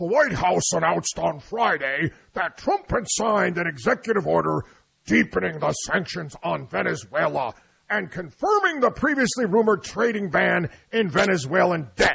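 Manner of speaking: stern, pompous puppet voice. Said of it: "I got to use my Sam the Eagle voice from the Muppets".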